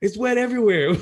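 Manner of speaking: acted screaming. Retelling a wet night in the tent: imitating Nevi screaming. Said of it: "all I heard D V scream was".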